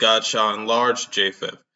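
ordinary delivery

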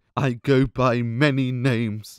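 slow, tearful, weeping through the words. Retelling an orc asking Sauron who he is: imitating Sauron crying. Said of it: "Sauron's crying through his words".

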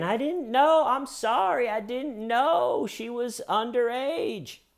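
very high, slow, whiny pleading tone.

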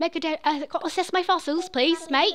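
put-on polite-sounding British accent. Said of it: "He honestly has a British accent".

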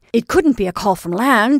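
hurried, rushed delivery. Woken by a call, a captain dressing quickly asks, hurriedly. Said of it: "he asked hurriedly".

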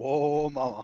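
cartoonish smooth ladies' man. Talking about a game character, a speaker quotes him in a Johnny Bravo voice. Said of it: "He definitely has like a Johnny Bravo voice".

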